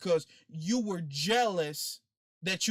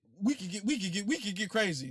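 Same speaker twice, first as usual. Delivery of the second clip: put-on stutter; 3 semitones higher than usual. Retelling how Sonny stuttered: imitating Sonny's stutter. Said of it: "You got me stuttering like Sonny".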